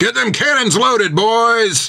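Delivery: put-on high booming shout, boys drawn out. Narrator reads Jack giving an order across the ship's deck, booming shout. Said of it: "Jack's voice boomed across the deck".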